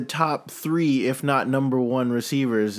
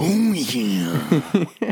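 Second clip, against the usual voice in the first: put-on gravelly wrestler voice, pitched higher; 4 semitones higher than usual. Answering the remark by playing along with a Macho Man impression. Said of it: "with the Macho Man".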